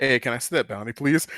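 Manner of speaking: mock toneless, dead-level monotone. Acting out what Emma says on arriving, imitating Emma's monotone. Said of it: "Emma's literally just coming there monotone".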